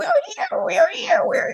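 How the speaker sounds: tiny, very high, small piping voice. Describing feeling unheard, the speaker acts out a tiny little voice. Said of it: "the little voice going".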